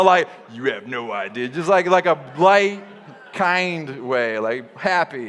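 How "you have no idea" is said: very low, hushed, menacing, sinister tone. Speaker showing the audience how not to say a phrase, sinister. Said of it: "But don't say it in a sinister way".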